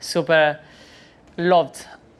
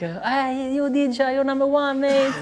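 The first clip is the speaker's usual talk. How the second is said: mock high-pitched, very high, shrill scream; 10 semitones higher than usual. Retelling a guy in a shop calling out: imitating a guy screaming. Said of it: "there is one guy screaming".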